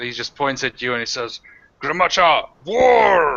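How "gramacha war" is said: high, loud yelled war cry, war stretched out. Voicing an enemy who points at a player: enemy yelling a war cry. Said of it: "he's just yelling at you".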